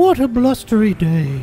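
high-pitched storybook cartoon bear voice. Performing a line for others who judge it, in a Pooh Bear voice. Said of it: "You sound like Pooh Bear there".

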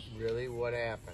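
deep, soft fatherly voice.

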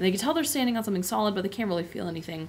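plain reading voice

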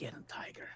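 hushed whisper, barely audible. Whispering into another character's ear during the game: whispering. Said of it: "I whispered Borky's ear".

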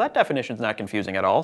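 dry, sarcastic tone, laid on thick. Commenting on a dictionary definition just quoted: sarcastic. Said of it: "Sarcasm, sarcasm".

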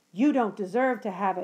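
rising voice. In an argument, one character answers the other, voice rising. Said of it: "his voice rising".

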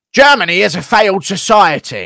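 drawn-out loud speech. Answering a chat request to do an Andrew Tate impression. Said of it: "do an Andrew Tate impression again".

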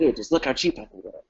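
pushy, hard-sell car salesman voice. Speaker urging listeners to join, then slipping into a car salesman voice. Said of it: "I sound like a car salesman".

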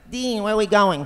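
put-on very high, loud little boy voice. Impersonating the young Jerry Lewis talking to Dean: boyish Jerry Lewis voice. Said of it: "he would kind of talk like this and kind of boy-like".

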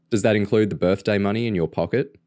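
usual speaking voice

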